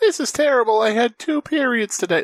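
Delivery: put-on very high girlish whine. Acting out a cartoon character's line as a joke: Meg voice. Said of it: "That's Meg".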